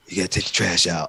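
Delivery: very low, deep, just-woke-up morning voice. Retelling a wife's early-morning request: imitating a low morning voice. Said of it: "those low voices ... when they wake up".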